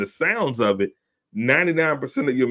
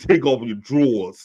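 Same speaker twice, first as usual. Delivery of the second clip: put-on, mock New York accent; 5 semitones higher than usual. Retelling what a woman told a boy, imitating a new york accent. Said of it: "she got that New York accent".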